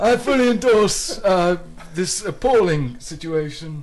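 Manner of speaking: put-on royal voice. Fooling around for listeners before returning to normal, in a Prince Charles voice. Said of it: "I'm going to stop my Prince Charles tomfoolery and return to my normal voice".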